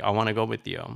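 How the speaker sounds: mock tearful, crying plea. Retelling begging a parent on the phone as a child: imitating own past crying. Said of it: "a ten-year-old kid crying".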